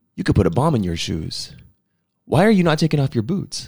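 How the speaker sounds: mock-condescending tone, male voice. Retelling what a man in the line told the speaker, mock-condescending tone. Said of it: "he was being like very condescending".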